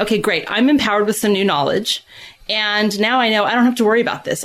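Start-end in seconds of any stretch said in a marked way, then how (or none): none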